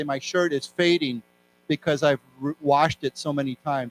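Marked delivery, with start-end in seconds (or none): none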